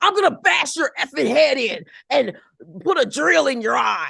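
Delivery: loud, rough, in-your-face tough-talk, threatening, swinging delivery. Imitating an over-the-top threat from the Mob Wives: imitating Mob Wives threatening. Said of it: "You're jumping out your face at me".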